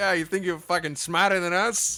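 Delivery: very loud, put-on Boston accent. Imagining how game characters would sound if they had Boston accents: put-on Boston accent. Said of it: "If they had Boston accents".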